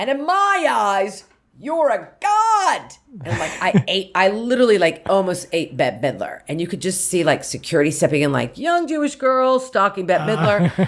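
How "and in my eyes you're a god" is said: very high, loud, forceful, drawn-out aggressive outburst, acted. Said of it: "the tone of my voice got louder, more aggressive".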